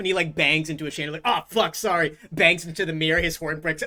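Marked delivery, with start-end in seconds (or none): 1.3-2.2 big, heavy minotaur creature voice. Voicing the Minotaur banging into a chandelier: voicing Matt Torres the Minotaur. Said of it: "the big Minotaur".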